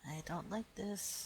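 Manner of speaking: slow, hushed whisper. Voicing a character sharing a worry with the others: whispering in character. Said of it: "I whisper that in character".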